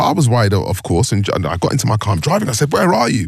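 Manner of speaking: plain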